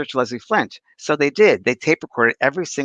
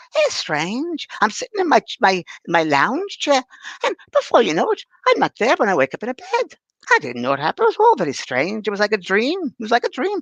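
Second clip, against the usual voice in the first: put-on Scottish female accent, pitched higher; 8 semitones higher than usual. Retelling what a Scottish lady said on a séance tape: imitating Mary's Scottish accent. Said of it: "a Scottish lady".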